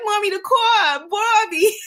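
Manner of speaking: put-on heavy New York accent. A mother imitating her daughter talking, in a thick New York accent. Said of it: "a very thick New York accent".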